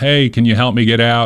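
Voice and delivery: ordinary talk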